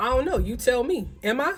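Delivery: acted, sassy, snarky tone with attitude. Retelling a phone call where he dodged the question: imitating an attitude. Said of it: "with an attitude".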